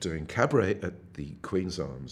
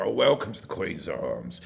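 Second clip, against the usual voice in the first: put-on deep voice from down in the gut; 2 semitones lower than usual. Imitating the pub host's welcome before the acts: imitating Josie Thompson's gut voice. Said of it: "He had this incredible voice, like Peggy Mount".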